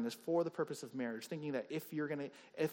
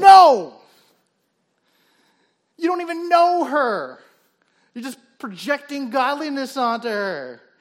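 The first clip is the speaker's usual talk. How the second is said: worked up, amped-up outburst, very high and very loud; 11 semitones higher, 21 dB louder than usual. Arguing that the listener only projects godliness onto her: amped up. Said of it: "I didn't mean to get that, that amped up about it".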